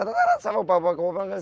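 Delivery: high, rattled-off fast comic patter at top speed. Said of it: "c'est je parle vite".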